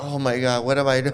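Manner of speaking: put-on frightened, terrified, out-of-depth blurt. Retelling how a girlfriend reacted with a terrified demeanor: imitating a terrified girlfriend.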